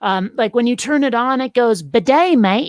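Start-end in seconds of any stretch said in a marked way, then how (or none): 1.8-2.7 put-on Australian accent. Hosts imagine a voice for a talking bidet; Australian accent. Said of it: "we should get an Australian voice".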